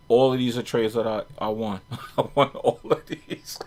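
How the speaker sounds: words broken up by laughs throughout. Showing viewers the trades the speaker won on a chart: laughing while talking. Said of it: "I'm sorry, but I'm laughing".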